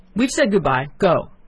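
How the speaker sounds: sudden, loud, furious angry shout. Old prince sending his son away, opening his door; loud angry shout. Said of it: "He suddenly shouted in a loud, angry voice".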